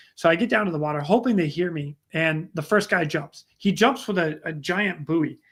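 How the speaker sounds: plain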